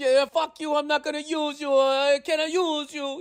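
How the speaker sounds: angry put-on Italian accent. Retelling how the little Italian guy got all mad: imitating a mad Italian man. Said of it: "The little guy got all mad".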